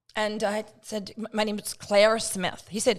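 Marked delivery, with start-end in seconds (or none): 1.3-2.6 put-on American accent, a best attempt. Retelling being asked their name, the speaker answers in an American accent. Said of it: "my best American accent".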